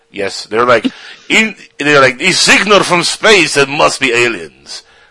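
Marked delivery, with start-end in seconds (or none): 1.3-4.9 slow, swooping put-on Russian accent. Imitating Russian astronomers announcing a signal: best Russian accent. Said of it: "That's my best Russian".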